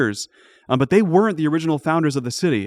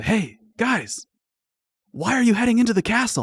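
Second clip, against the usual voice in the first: sneaky whisper, higher pitch; 6 semitones higher than usual. A game master voices a prince whispering into the players' ears: sneaky whisper. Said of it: "You hear a whisper in all four of your ears".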